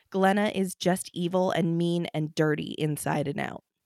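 plain

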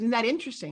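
plain

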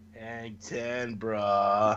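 low, soft, laid-back surfer drawl. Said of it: "you sound like a surfer".

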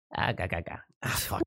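hushed, breathy cartoon sailor voice. Asked to try an Irish accent, the attempt comes out as a Popeye voice. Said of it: "that's Popeye".

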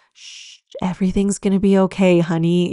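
mock soothing, comforting motherly voice. Showing what mothering someone sounds like: imitating a comforting maternal tone. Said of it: "a comforting, like, maternal way".

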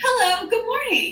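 put-on bright, high, happiest possible cheerful voice. Retelling greeting an engineer in the office: imitating own happy greeting. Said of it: "in the most, like, happy voice".

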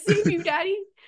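very high, shrill, loud screaming cat voice. Speaker voices her cat asking for Daddy, who is still asleep, voicing the screaming cat. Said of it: "my cat screaming at me".

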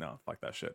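acted, breathy, sarcastic whispered dismissal. Describing punk rock values, saying a line in a sarcastic way. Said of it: "I'm saying this in a sarcastic way".

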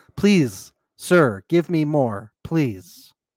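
put-on, mock-sexy pleading voice. Reenacting exactly how she said the line, imitating her sexy pleading. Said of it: "Just like how she said it".

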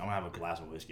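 deep, low voice. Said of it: "he's got this voice, he's deep".

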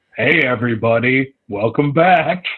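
put-on cool, seasoned old man narrator voice. Retelling the returning narrator's single line: imitating a cool old man narrator. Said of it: "cool old man narrator".

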